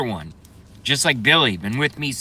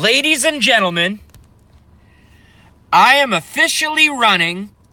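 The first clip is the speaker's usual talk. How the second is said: loud, high-pitched, big rally-style announcer proclamation; 9 semitones higher, 5 dB louder than usual. Quoting Trump's announcement speech, doing a Donald Trump impression. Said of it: "I even have the rhythm and the diction and the tone and everything".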